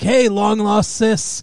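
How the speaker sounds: odd put-on Brooklyn accent, strongly leaned into. Retelling a scene from the show: Evan Peters' weird Brooklyn accent. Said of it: "He's got this weird Brooklyn accent".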